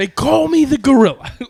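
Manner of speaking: very loud, very high wrestling-promo shout. Describing another guy his dad met, imitating a Mr. T-style promo yell. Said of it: "like he's doing a wrestling promo".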